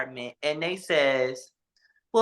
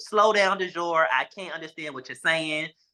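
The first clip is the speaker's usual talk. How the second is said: ordinary talk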